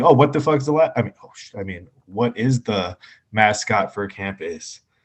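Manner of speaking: ordinary delivery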